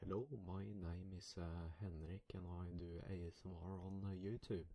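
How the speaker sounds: accent dropped, plain accentless normal voice. Showing how one would sound speaking without an accent: speaking without an accent. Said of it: "if I were to speak without an accent".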